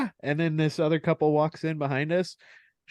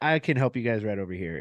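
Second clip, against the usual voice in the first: put-on apologetic, sweet tone, lower; 5 semitones lower than usual. Retelling how a boss offered help: imitating someone apologetic and sweet. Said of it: "super apologetic and fucking very sweet".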